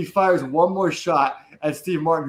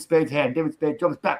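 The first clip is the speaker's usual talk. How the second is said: ordinary talk, nothing marked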